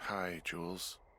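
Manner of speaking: drowsy, sleepy, tired, just-woken voice. Woken up and called on the radio, greeting the caller in a tired voice. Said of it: "you sound tired".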